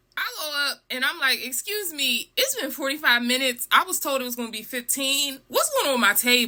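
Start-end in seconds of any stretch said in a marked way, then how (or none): none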